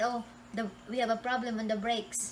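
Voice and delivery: ordinary talk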